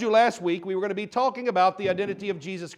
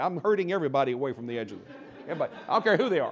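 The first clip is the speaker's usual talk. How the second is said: ordinary talk, nothing marked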